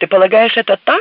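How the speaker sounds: loud shouting. A passenger calls out from the back row of the plane, shouting. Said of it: "крикнула с заднего ряда Шейла".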